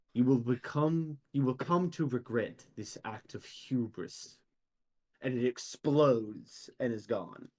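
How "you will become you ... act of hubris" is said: strange, ghostly, unsettling, eerie echoing voice. Voicing a strange construct right before it explodes: strange eerie echoing voice. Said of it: "strange, eerie voice echo out of it".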